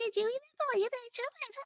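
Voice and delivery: put-on very high, soft, squeaky, little girly voice. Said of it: "it would be high pitched".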